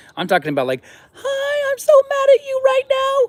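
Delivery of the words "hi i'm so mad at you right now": funny, very high, loud cartoon squeak. Showing how to imagine an angry person's voice: cartoonish funny squeaky voice. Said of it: "cartoonish, funny squeaky".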